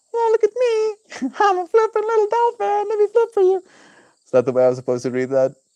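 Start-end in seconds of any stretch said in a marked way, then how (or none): 0.1-3.6 very high, squeaky little dolphin voice. Reading a dolphin's scripted line aloud, in a squeaky dolphin voice. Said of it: "Sounds kind of like a squeaky voice".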